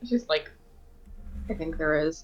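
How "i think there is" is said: mumbled quietly under the breath. Voicing a character who disagrees about using the sword: mumbled under breath. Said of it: "mumbles under her breath".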